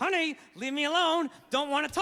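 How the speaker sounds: speaking through gritted teeth. Retelling what he said after she slapped his headphones off, through gritted teeth. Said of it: "talking through my teeth".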